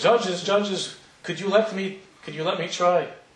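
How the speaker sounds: put-on heavily broken Eastern European accent. Telling a story, the speaker quotes a man standing up in the auditorium: very broken accent. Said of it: "in a very broken accent".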